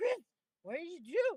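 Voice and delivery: put-on deeply concerned tone. Retelling a friend's question about what happened: imitating someone very concerned. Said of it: "Like, very concerned".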